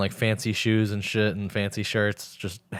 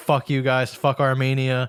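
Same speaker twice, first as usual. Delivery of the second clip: put-on re-enacted scream, pitched higher; 4 semitones higher, 3 dB louder than usual. Retelling yelling from the car window at people on the road, retelling a scream. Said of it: "I was just screaming".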